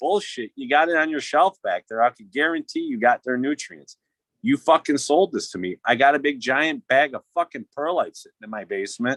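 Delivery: mock furious, heated, angry rant. Retelling an argument over returning bags: retelling own angry words. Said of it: "I was so fucking hot".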